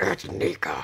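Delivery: sounding like a demon. Retelling correcting how he says Nika, demon voice. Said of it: "And I sound like a demon".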